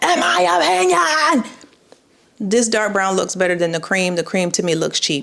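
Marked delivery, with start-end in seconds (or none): 0.0-1.5 pitched very high with creak. Reviewing a brown color, giving an opinion in a Tamra Judge voice. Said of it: "in my Tamara Judge voice".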